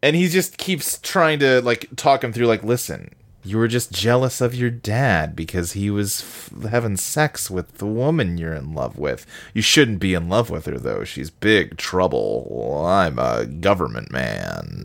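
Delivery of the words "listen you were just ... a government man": deliberate deep, slow villain drawl, "man" stretched out. Speaker recounts a man talking someone through their feelings; Mandarin impression. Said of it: "I don't know why I'm doing that voice".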